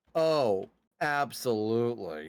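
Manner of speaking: dry, ironic, mocking sarcastic tone. Illustrating what sarcastic agreement sounds like: sarcastic agreement. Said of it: "Sarcastic agreement would be like".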